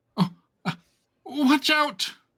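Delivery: tiny, very high voice. Narrating a scene, the storyteller voices an unseen speaker calling out, tiny voice. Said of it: "you hear a tiny voice say".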